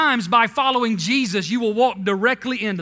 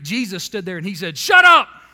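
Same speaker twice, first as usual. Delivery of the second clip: ordinary delivery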